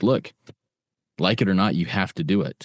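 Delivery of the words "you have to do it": ordinary talk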